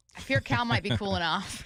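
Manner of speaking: ordinary talk, nothing marked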